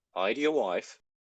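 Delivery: put-on English accent. Imagining a line being said in another way, english accent. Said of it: "imagining that being said in an English accent".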